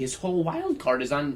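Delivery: voice cracking on a word mid-line. Talking fantasy football with co-hosts, your voice cracks: voice cracking. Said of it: "That was a voice crack".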